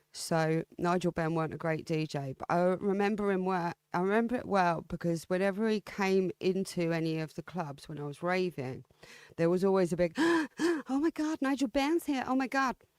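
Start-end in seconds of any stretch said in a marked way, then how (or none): 10.1-12.7 raver-style put-on American accent, pitched higher. Recalling how ravers reacted when someone arrived at the club, in a put-on American accent. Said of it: "Don't know why I put on an American accent there".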